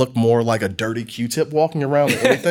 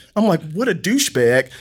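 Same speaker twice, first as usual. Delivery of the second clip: ordinary talk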